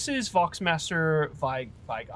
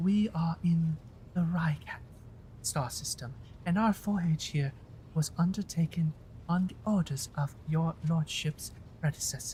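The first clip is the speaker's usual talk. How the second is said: put-on female voice; 5 dB quieter than usual. Voicing a woman character's lines, in a put-on female voice. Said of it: "I'm just gonna do a female voice".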